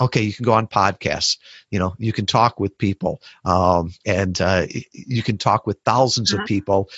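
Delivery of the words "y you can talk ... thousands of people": ordinary talk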